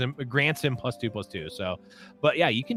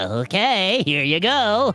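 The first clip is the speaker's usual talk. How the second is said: higher-pitched, projected voice; 6 semitones higher, 5 dB louder than usual. Voicing the deck granting a wish for Lee Sins: monkey's paw monkey voice. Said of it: "that's the voice of the monkey".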